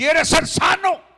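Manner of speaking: loud, high, ringing calling tone.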